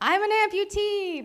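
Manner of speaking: very high, loud yell. Retelling calling out to a stranger on a bike: retelling a yell. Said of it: "I just decided to yell".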